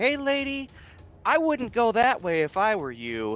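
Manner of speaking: shouting. Voicing a character who calls out to a lady, yelling. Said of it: "Seer yells at the lady".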